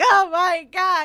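put-on very loud, high cry-laughing outburst. Retelling reading comics alone at home: imitating own cry-laughing. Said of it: "cry laughing out loud at these comics".

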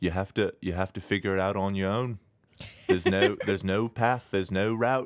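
put-on whispery Liverpool accent. Retelling what a speaker told college writers: imitating a whispery Liverpool voice. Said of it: "He was very whispery".

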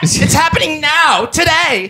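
agitated, worked-up insistence. Ranting about a secret government plot: worked up. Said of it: "I have to go calm down".

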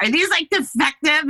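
high, demanding, insistent yell. Retelling yelling at the guy at the store, retelling a yell. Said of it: "I yelled at the guy at the store".

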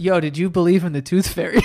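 normal talking voice

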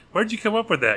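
put-on teasing tone. Speaker retells a reporter's question to Roberts, retelling a joking question. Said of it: "he just sort of jokingly".

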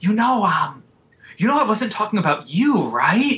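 put-on whisper. Retelling what a student said when leaning in close: imitating someone whispering. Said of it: "She leaned in and kind of whispered".

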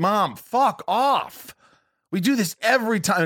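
very slow, high, dragged-out yell. Speaker recalls snapping at a hypochondriac mom: retelling yelling at Mom. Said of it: "It's the one time I yell at her".

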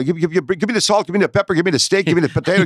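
put-on fast French Canadian accent. Describing French Canadians, the speaker imitates how they talk: fast French Canadian talk. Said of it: "they talk a lot, a lot fast".

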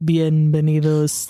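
flat deep deadpan. Retelling a hotel greeter with a clipboard welcoming children, deep monotone. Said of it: "Like just a very deep monotone".

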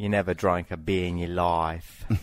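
put-on Australian accent. Asked to do australian, you say the one thing you can, in a put-on australian accent. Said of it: "how about Australian?".

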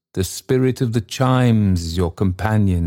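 ordinary delivery

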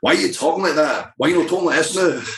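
put-on high, fast speech in thick Scottish accent. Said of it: "Scotland to bring me back down to earth and say".

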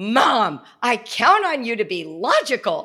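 acted, loud, slow, swooping angry speech. Retelling a son's angry reply to Mom: imitating an angry declaration. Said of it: "declared with so much anger".

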